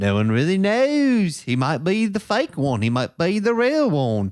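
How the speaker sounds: bad, clumsily faked English accent. Staying in character as Ringo, bad English-accent Ringo impression. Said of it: "I do a bad job between this accent".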